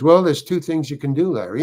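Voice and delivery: mock steady, soothing voice. Retelling what the director said to calm a nervous actor: imitating a calm director. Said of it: "And he's very calm, very calm".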